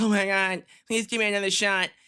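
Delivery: high-pitched, pleading, begging voice. Retelling a wrestling segment, voicing The Miz: imitating The Miz pleading. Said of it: "Miz is like".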